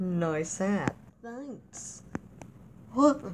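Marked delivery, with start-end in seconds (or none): 0.0-0.9 low-pitched, mocking, insincere sarcastic tone. In a comedy sketch, one character compliments another's hat, sarcastic. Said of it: "I was being sarcastic".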